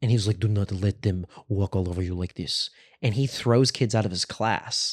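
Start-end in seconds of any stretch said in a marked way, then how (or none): 0.4-2.7 put-on mobster-sounding voice. Retelling what a teacher from Turkey told his class, mobster-sounding voice. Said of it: "this dude sounds like a mobster".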